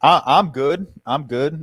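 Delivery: very loud, high, talking through mouthful of food. Asked how they're doing this week, talking with mouth full. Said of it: "Just got a mouthful of food".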